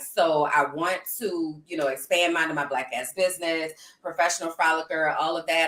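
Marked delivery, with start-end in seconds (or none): none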